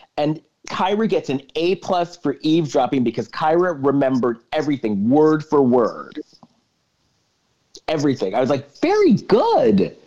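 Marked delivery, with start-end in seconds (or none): 8.8-9.9 proudly approving, very high-pitched voice. Retelling own reaction to a character: imitating own proud tone. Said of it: "You sounded so proud there".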